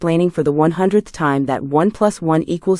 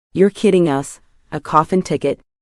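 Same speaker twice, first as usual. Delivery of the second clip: ordinary delivery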